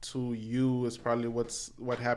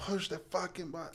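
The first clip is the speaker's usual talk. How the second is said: high, furious, raging mock scream; 7 semitones higher, 7 dB quieter than usual. Retelling what the guy behind kept yelling: imitating someone screaming. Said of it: "he kept screaming that".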